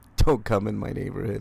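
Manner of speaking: plain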